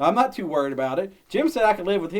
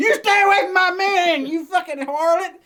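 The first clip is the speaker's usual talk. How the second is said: high, jealous, accusing neighbor-lady voice; 11 semitones higher, 4 dB louder than usual. Acting out the lady back there scolding about Angela: imitating the neighbor lady. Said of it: "She like".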